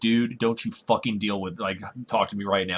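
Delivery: put-on angry tone. Retelling answering an annoying customer in the store: imitating an angry glare. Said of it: "this death glare like".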